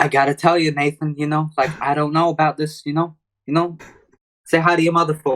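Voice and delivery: put-on halting, hesitant delivery in a Boston accent. Showing how Mark Wahlberg would play Sully, Mark Wahlberg Boston accent impression. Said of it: "They all have that accent".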